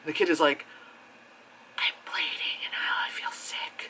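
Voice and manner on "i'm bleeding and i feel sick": hushed, breathy, barely voiced whisper. Retelling a movie scene where a kid calls nine one one: imitating a whisper. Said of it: "Why are you whispering?".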